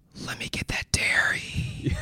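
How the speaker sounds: low, slow, hushed whisper, close. Retelling how Evan leaned over in church: imitating Evan's whisper. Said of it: "leans over to me and whispers".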